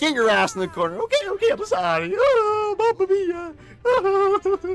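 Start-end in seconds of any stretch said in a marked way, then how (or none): 1.0-4.8 very high, drawn-out cartoon character voice. Acting out a skit where Mario is scolded, in Mario voice.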